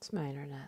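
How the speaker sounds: low indistinct mumbling mutter. Answering a greeting while the internet keeps failing: mumbling. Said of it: "you're mumbling".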